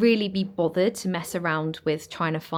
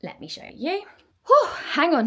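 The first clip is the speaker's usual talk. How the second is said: very high, winded, puffing, out of breath; 12 semitones higher, 4 dB louder than usual. Speaker about to show a newly decorated room, out of breath. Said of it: "let me catch my breath".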